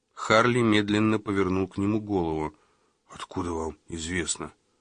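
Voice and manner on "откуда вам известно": low, soft mutter under the breath. Harley slowly turns his head to Magozzi and replies, muttered. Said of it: "Пробормотал он".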